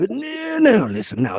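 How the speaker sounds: upper-crust English accent. Talking with another person, the speaker shows off an upper-crust english accent. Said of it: "I do the most wonderful English accent now".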